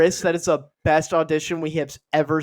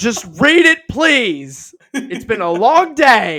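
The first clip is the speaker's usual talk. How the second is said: mock angry shout, higher and louder; 6 semitones higher, 7 dB louder than usual. Acting out a casting person who gets mad at an audition: acting out an angry outburst. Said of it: "One of the guy gets mad and he goes".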